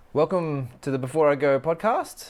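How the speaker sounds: high, loud, bad mock Irish accent. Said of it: "that was a bad Irish accent".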